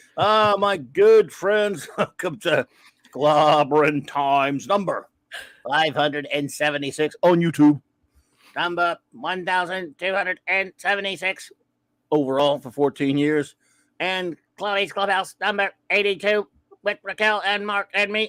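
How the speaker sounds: robotic, mechanical voice. Host welcomes good friends to the show's new episode, robotic Dalek voice. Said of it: "I don't know why I'm talking like this. Oh my God, I'm a Dalek".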